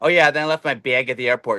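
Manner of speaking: put-on Canadian-sounding accent. Imitating how a canadian talks, in a canadian accent. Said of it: "you could tell Canadian".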